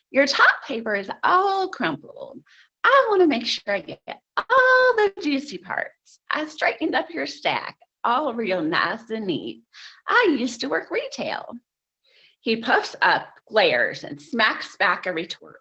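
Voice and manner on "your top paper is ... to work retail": put-on heavily laid-on, swooping Tennessee accent. Retelling own words to a counter clerk: Nebraska girl turned Tennessean accent. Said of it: "in my best Nebraska girl turned Tennessean accent".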